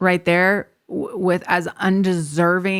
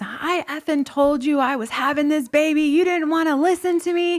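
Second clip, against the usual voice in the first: put-on furious, high, angry yelling tirade; 9 semitones higher than usual. Retelling a birth, yelling at hospital staff who came late: retelling yelling at staff. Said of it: "I'm yelling at them".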